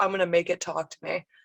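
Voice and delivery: ordinary talk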